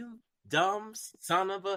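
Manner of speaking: insulting, condescending tone. Recalling a game-show host's reactions to wrong answers, the speaker imitates him; mocking Alex Trebek's scornful tone. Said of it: "he would have that tone in his voice".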